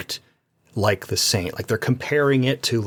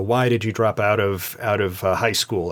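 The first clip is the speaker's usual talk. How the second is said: normal talking voice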